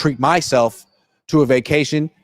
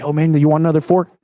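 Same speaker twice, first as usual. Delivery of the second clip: imitated whisper. Retelling how a restaurant waiter comes over: imitating a whispering waiter. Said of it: "whisper in your ear".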